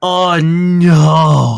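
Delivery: loud gasping creature cry, drawn-out "no". Voicing a creature collapsed on a display case: gasping creature.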